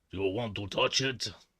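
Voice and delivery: mock fake Russian accent. Joking about growing a beard, speaking in a fake russian accent. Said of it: "talk like this".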